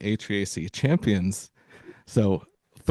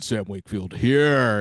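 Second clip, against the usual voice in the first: put-on radio announcer voice, on-air delivery. Welcoming listeners back to the show and introducing himself in radio voice. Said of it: "Let's use radio voice for a second".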